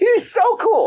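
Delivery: voice jumping way up high. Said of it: "Sorry, my voice went high".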